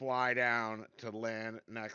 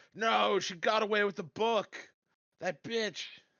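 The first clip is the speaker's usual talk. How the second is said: loud, high, despairing cry; 9 semitones higher, 5 dB louder than usual. A player's character yells after someone teleports away with the book: yelling out in despair. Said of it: "I'd yell out in despair".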